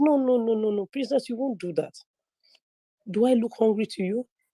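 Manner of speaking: put-on tiny, sweet, small, cute baby voice. Retelling what he said to her, in a small, cute voice. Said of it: "with that his small, cute voice".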